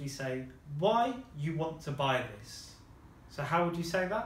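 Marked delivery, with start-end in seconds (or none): none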